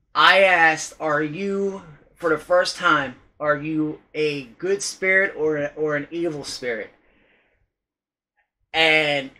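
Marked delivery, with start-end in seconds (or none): none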